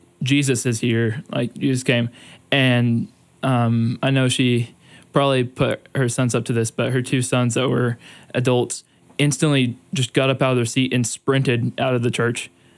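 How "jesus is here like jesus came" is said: ordinary talk, nothing marked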